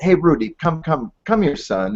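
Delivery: put-on fatherly voice with a South African accent. Retelling how a father called his son Rudy over, imitating Donnie's South African accent. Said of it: "in that great South African accent".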